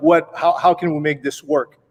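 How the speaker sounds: plain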